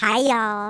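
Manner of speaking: squeaky, electronically altered voice. Podcast host greeting listeners after editing their voice, squeaky edited voice. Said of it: "it sounds really squeaky".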